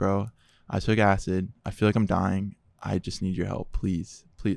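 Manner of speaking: mock, desperate pleading as if for life. Retelling a call to a brother for help, retelling own begging. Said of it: "I was like begging and pleading like for my life".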